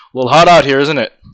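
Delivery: loud, chest-out, swaggering macho bravado. A player's character walking up to a knight, with very macho bravado. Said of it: "with a very macho bravado".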